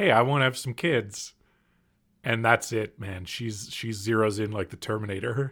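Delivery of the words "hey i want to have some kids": mock mild, easy, offhand, very gentle tone. Retelling a husband's line from a film: imitating a gentle tone. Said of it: "In a very gentle way".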